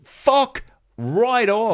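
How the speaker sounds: put-on screaming. Speaker recounts jumping up and shouting at a thought, retelling a scream. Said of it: "And I was screaming at it".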